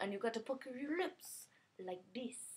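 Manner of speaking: Caribbean-accented voice.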